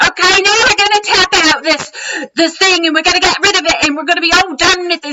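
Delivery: very high, loud, high-energy hyped-up instructor voice. Imitating a guy in a tapping video: imitating a high-energy guy with an accent. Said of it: "this is what it sounded like".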